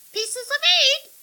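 shrill, muffled squawk, very high pitched. A muffled voice cuts into Jake and Millie's whispered argument: muffled squawk. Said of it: "Squawked a muffled voice".

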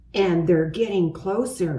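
ordinary delivery

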